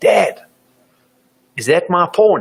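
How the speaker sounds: put-on acted, top-of-the-lungs little kid shout, loud and high. Retelling a son shouting in the supermarket: imitating a child yelling at top volume. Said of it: "yells out at the top of his voice".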